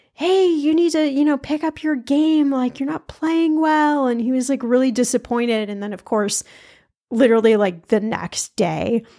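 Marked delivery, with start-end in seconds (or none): 0.2-4.1 put-on, high-pitched, jeering, taunting yell. Retelling a dad yelling at a player during a game: imitating someone taunting and yelling. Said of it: "yelling, ... taunting, yelling".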